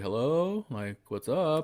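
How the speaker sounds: put-on groggy, just-woke-up voice, slow sleepy drawl. Retelling a movie scene where a character gets woken up, imitating a just-woken-up voice. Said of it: "like he just woke him up".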